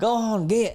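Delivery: put-on very high-pitched Outer Banks accent. Reading a story line aloud in the Outer Banks accent. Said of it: "in that accent".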